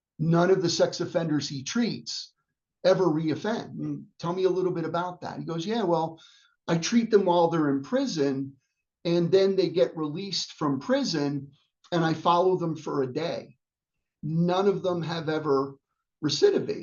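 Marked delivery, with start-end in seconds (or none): none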